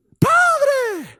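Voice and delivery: very high, loud, belted-out cry in changed voice.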